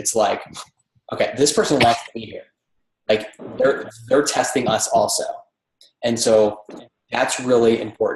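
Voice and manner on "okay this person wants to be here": normal talking voice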